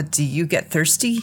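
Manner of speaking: ordinary talk, nothing marked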